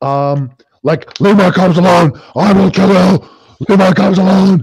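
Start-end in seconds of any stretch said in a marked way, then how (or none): 1.2-4.6 high, raging, bestial creature scream. Voicing a beast screaming at the lady taking its cubs: creature screaming threats. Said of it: "that he's, like, screaming".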